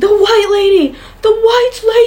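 put-on very high, stretched-out, drawn-out scream in a boy's voice. Telling a story about a castle, voicing a little boy: retelling a boy's scream. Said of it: "He was screaming".

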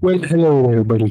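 storyteller narrator voice. Starting to tell listeners about last night's dream, in a narrator voice. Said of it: "I need my narrative voice real quick".

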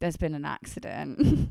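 plain

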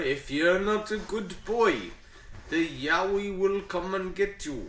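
put-on Indian accent.

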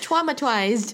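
put-on babyish, childish baby voice. Mimicking how she says words like traumatized: baby voice on traumatized. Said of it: "but in a... baby voice, so like".

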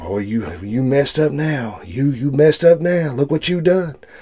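soft, needling half-whisper. Acting out the devil half-whispering guilt in your ear: devil half-whispering. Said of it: "He keeps whispering in your ear".

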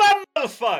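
loud far-carrying call. Voicing a character calling to friends forty feet away: shouting to friends far away. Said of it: "He turns to his friends that are, like, forty feet away".

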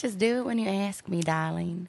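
Southern American accent. During a truth-or-dare game, showing how to ask the question: southern accent. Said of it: "Do a southern accent until the game's over".

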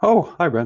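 mock surprise. Greeting the other speaker on being brought in: fake surprise. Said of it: "this fake surprise".

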